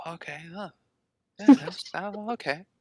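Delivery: put-on little whisper. Recalling how Ryder talks during movies, imitating Ryder's little whisper. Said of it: "just a little whisper and he goes".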